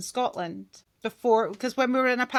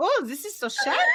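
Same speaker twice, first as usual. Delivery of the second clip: high-pitched put-on camp German man voice; 5 semitones higher than usual. Recalling how he has talked all week, the speaker shows it: camp German man voice. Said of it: "I have been a camp German man all week".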